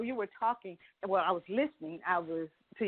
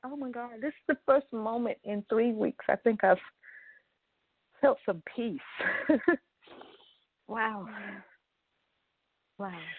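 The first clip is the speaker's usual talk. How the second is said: teary voice, fighting hard not to cry; 3 semitones higher than usual. Talking with someone in the moment, holding back tears. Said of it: "I'm trying not to cry".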